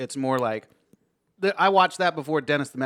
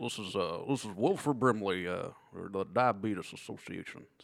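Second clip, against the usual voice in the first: low, very soft, hushed announcer voice; 5 semitones lower, 9 dB quieter than usual. Retrying the diabetes spokesman impression a little lower: lower Wilford Brimley impression. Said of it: "This is a little lower".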